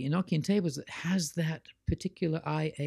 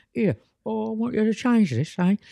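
jokey, hammed-up, high, loud put-on English accent; 6 semitones higher, 7 dB louder than usual. Voicing the angels giving an instruction, English Monty Python accent. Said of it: "put on this English Monty Python accent".

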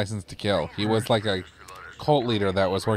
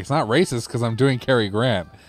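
plain

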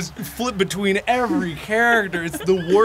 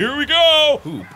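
excited, high-pitched shouting; 6 semitones higher, 3 dB louder than usual. Gamer starting another round against an opponent, shouting.

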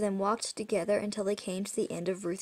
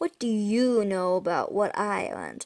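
plain

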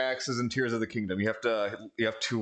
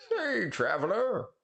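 put-on very high, aged old person character voice; 10 semitones higher than usual. Playing a game and voicing a character: old person voice. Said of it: "giving everyone an old person voice".

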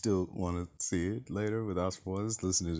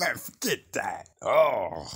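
high-pitched, loud, punchy comic delivery; 5 semitones higher, 8 dB louder than usual. Explaining the riff just done: imitating Tony Baker. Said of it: "And he'd be like".

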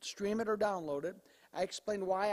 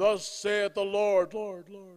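loud, showy, theatrical preacher-style pulpit declaiming; 9 dB louder than usual. Describing churches where someone stands up and goes, imitating a church showman. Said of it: "somebody stands up and goes".

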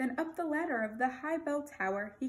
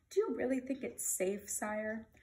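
ordinary delivery, nothing marked

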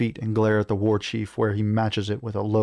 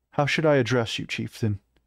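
ordinary delivery, nothing marked

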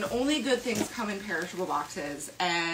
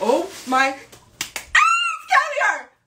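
very loud, high, drawn-out thrilled yell; 13 semitones higher, 10 dB louder than usual. Unboxing a gift and finding caviar inside: loud excited shout. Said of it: "sorry for your ears".

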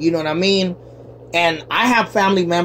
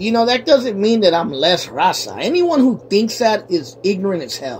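normal talking voice

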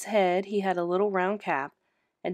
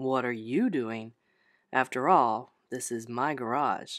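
odd, strange, very low, deep voice; 7 semitones lower than usual. Narrator reads Peter speaking in the garage, still in his strange, deep voice. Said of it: "Still in his strange, deep voice".

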